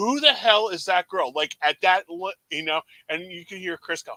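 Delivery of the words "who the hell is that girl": big, really loud hollered outburst. Retelling turning to a brother in a movie theater: imitating himself yelling loudly. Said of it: "I said it really loud".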